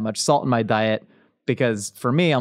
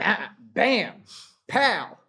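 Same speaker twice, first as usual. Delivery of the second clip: shouting, higher-pitched; 9 semitones higher, 5 dB quieter than usual. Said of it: "I don't know why I yelled that".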